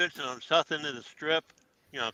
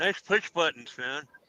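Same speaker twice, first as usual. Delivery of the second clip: ordinary talk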